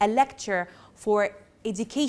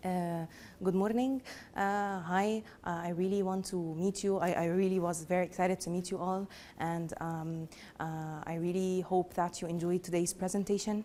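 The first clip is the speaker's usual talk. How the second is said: soft, flat, dull, droning, boring presenter tone; 3 semitones lower, 8 dB quieter than usual. A speaker showing an audience how not to speak; boring, dull delivery. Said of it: "you'll probably sleep in less than five seconds".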